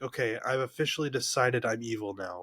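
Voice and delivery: ordinary talk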